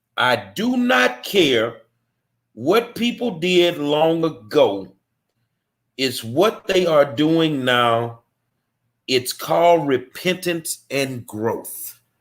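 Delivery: reading out slowly. Reading aloud a commenter's post from another page, reading slowly. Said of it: "I want to read this slow".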